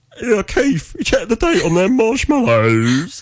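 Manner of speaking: very high rock-star voice. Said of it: "should we try [name]?".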